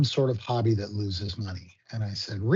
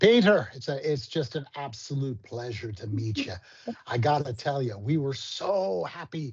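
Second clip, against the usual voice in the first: Canadian speech leaning into a near-Irish brogue; 4 semitones higher than usual. Retelling what a man said on meeting the speaker, imitating an Irish-sounding brogue. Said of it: "almost came across like an Irish brogue".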